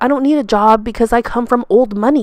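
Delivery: ordinary delivery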